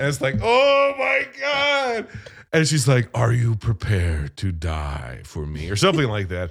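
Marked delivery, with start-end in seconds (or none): 3.1-5.7 very low, really scary possessed voice. Retelling a scene, quoting her next line to the girl: really scary voice. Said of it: "like in a really scary voice".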